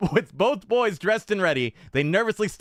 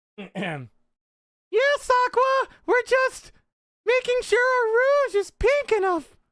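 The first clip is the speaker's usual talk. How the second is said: very high, very slow, put-on ladylike feminine voice. Narrator reads Steve answering Aqua, faking a higher, more feminine pitch. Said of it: "with a higher, more feminine pitch".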